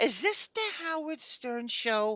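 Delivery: slow, drawn-out ranting delivery. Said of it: "you sound like Hate Woman on that".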